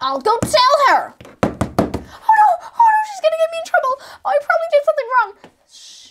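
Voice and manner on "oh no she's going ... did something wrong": high, rushed, anxious, fretful words tumbling out. In a skit, someone worries after going to tell the teacher: anxious, panicking. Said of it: "Stop being so anxious".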